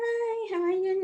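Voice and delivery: friendly, pleasant tone. Showing how to greet someone met on the street, nice, smiling greeting. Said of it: "Nice, smiling".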